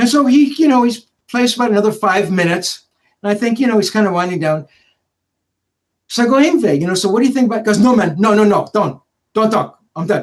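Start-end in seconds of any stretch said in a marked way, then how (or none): 7.8-10.2 put-on very heavy Swedish accent, laid on thick. Retelling Yngve's reply after practice, imitating Yngve's thick Swedish accent. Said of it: "I'm trying to imitate his Swedish accent".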